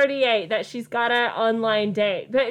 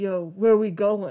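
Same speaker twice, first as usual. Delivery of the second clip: teen voice forced into a fake deep pitch; 4 semitones lower than usual. Retelling being interrupted while writing, the speaker quotes a 16-year-old kid in a fake low teen voice. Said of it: "Trying to make his voice sound low".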